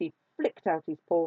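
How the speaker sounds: ordinary delivery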